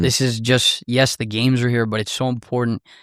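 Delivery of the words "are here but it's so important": ordinary talk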